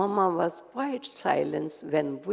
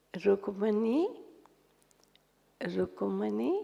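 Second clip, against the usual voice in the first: gentle, soft, sweet, slow call like a koel; 3 semitones higher, 3 dB quieter than usual. Recalling how the speaker's never-loud mother called for an absent sister: softly calling a name. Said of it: "Mama called her very softly".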